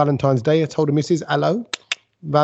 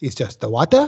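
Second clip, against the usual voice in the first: bad fake Italian accent, sing-song; 3 semitones lower than usual. Quoting what an Italian man said, terrible fake Italian accent. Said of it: "This is a terrible Italian accent".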